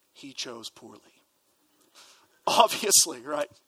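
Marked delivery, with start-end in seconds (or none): 0.1-1.0 very low, quiet, hushed, flat deadpan. Retelling a film scene, the knight speaks to Indiana Jones: retelling a deadpan line. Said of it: "the knight sort of deadpan looks at Indiana Jones and says".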